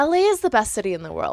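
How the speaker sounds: usual speaking voice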